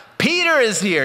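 high, loud, excited announcing shout.

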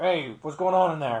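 robotic voice, as if through a helmet speaker grille. Describing how a Star Wars character sounds: Stormtrooper helmet voice. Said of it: "an original Stormtrooper would through their, like, robot".

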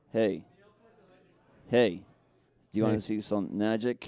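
deep, very low, charismatic street-magician patter. Voicing a puppet named Ollie offering magic: David Blaine voice. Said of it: "give Ollie the voice of, uh, the always charismatic street magician, David Blaine".

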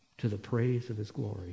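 low, soft, hushed murmur to oneself.

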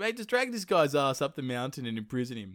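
ordinary delivery

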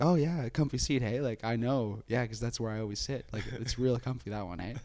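pointed, faux-friendly, full passive-aggressive chatter. Retelling what gets said to someone in the seat: imitating own passive-aggressive tone. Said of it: "my first approach is always just full passive aggressive".

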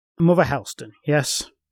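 ordinary delivery, nothing marked

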